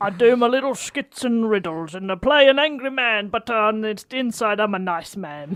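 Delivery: put-on Australian comedic voice. Doing an impression on request, meeting a Michael Caine impression: Broden Kelly impression. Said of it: "[name] as Broden Kelly".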